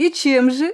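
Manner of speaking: scoffing, derisive, mocking tone. A former hr officer challenges the narrator with a mocking question. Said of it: "С издевкой спросила меня Визави".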